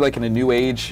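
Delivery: ordinary delivery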